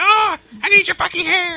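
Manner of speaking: squeaky puppet voice way up high. Retelling a play about a talking toy: Elmo voice. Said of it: "It was a talking Elmo".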